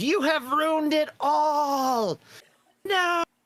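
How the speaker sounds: very high, piercing monster screech, all drawn out. A creature's new mouth screeches at the players as the portal shuts: screeching creature voice. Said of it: "another mouth appears and it screeches".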